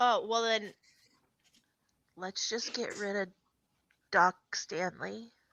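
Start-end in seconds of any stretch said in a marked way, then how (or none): 2.2-5.3 put-on sneaky, barely audible, very quiet child's stage whisper. Speaking in character behind a covered mouth: child stage whisper. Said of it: "The child stage whisper".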